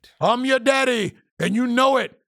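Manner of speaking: very loud, booming voice with full commanding authority.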